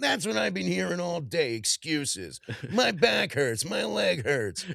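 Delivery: put-on gruff movie father voice. Quoting lines from Scrooged: Brian Doyle Murray impression. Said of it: "I'm always trying to do".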